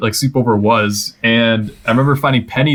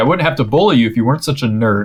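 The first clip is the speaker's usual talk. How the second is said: ordinary talk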